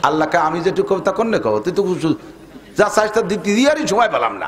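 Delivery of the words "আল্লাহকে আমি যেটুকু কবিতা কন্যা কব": ordinary talk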